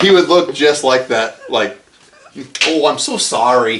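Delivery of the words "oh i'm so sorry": fake northern Canadian accent. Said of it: "Canadian northern accent".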